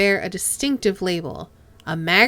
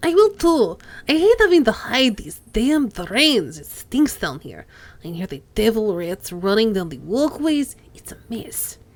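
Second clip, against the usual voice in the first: put-on Russian accent throughout. Reading a story aloud, voicing one of the characters in a Russian accent. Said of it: "I'm going to use my only Russian accent I have for the lot of them".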